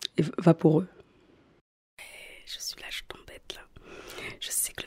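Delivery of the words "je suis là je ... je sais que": sneering, quieter, whispering little demon voice. Voicing the little demon that puts her to the test: sneering whispered demon voice. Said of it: "qui ricane un peu avec sa voix, sa voix chuchotée".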